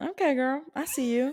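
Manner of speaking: put-on country accent. Role-playing a flirting scene, answering an offer of a drink: country accent. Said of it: "Why are you country?".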